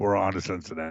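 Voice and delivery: mock monster voice, deep. Imagining Bill Belichick bursting into your bedroom at night: Bill Belichick demon voice. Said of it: "you sound like a demon".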